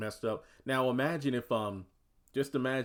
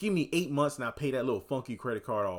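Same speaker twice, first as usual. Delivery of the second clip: acted-out sassy delivery with plenty of attitude; 3 semitones higher than usual. Retelling an episode scene, quoting Pam: imitating Pam saying it with attitude. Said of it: "she says with attitude".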